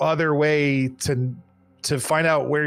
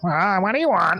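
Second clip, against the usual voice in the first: little skull voice, a little higher pitched; 4 semitones higher than usual. Game master voicing the ferryman's thirteenth voice: Charon's little skull voice, higher. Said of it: "is a little higher pitched".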